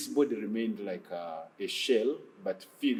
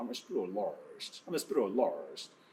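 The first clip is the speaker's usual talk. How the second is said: put-on pure American accent, slow and drawn out; 3 dB quieter than usual. Speaker retells a demon speaking during deliverance, put-on American accent. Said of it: "speaks pure American English".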